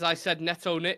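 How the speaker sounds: usual speaking voice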